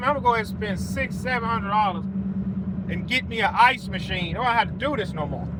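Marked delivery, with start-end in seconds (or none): none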